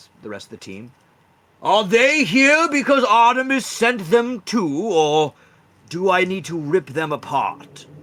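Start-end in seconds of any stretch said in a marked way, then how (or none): 1.6-7.9 deliberate, slow, loud earth elemental creature voice. Voicing an earth elemental greeting a visitor: Earth Elemental voice. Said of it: "He looks across the way".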